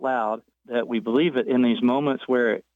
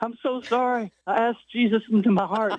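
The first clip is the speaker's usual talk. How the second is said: mock crying child's voice, high, tearful, sobbing; 10 semitones higher than usual. Retelling apologizing to mom as a seven-year-old: retelling crying through tears.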